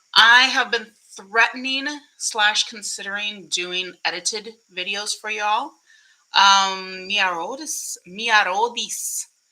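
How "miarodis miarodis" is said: put-on Spanish accent. Reading out a name that seems spanish, trying a spanish accent. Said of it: "so I tried my my Spanish accent".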